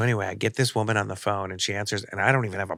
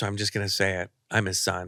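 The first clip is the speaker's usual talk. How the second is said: normal talking voice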